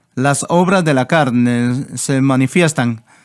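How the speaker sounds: ordinary talk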